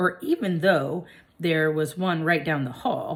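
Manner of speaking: ordinary delivery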